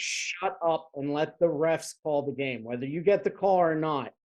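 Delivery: normal talking voice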